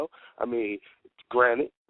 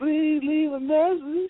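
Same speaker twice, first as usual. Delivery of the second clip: put-on sweet, very high little candy girl voice. Imitating a guest's voicemail greeting: imitating little candy girl voice. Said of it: "with the little candy girl voice".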